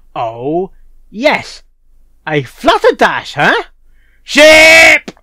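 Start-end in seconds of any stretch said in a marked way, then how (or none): 2.2-5.0 very high, very loud, swooping excited shout. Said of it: "Sorry, that was loud".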